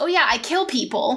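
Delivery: ordinary talk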